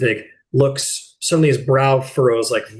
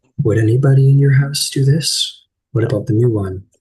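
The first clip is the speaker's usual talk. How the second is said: quiet, lower-pitched acted whisper; 4 dB louder than usual. Voicing a character who asks questions so another can't notice: lower whisper in character. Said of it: "she kinda whispers this lower so Orgrave can't see".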